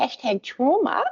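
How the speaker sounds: weird put-on voice. Speaker introducing a term during a talk, saying it in a weird voice. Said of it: "I'm going to say it in a weird voice".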